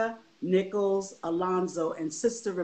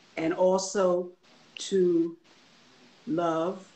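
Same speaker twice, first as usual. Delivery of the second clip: said very slowly, each word stretched out; 3 dB louder than usual. Speaker tells listeners her parents taught her to pray and love, said slowly. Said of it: "I said that slow".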